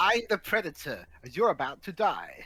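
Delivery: put-on upper-class British accent with sweeping pitch. Voicing the Predator, the speaker gives it a posh British accent. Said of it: "why did I make the Predator sound like a posh bloke".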